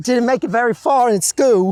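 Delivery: performed Welsh accent. Asked to go again, the speaker tries another take: welsh accent. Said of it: "Was that your Welsh accent?".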